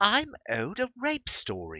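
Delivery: very high, very drawn-out, swooping sing-song British accent. Reading a line aloud in a put-on British accent. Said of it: "Now I have to read that one in a British accent".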